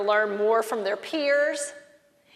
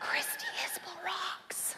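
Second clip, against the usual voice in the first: whispered, breathy, very quiet, barely audible; 9 semitones higher, 14 dB quieter than usual. Speaker leading the audience, telling them to turn and whisper to their neighbor: whispering. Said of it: "whisper and say".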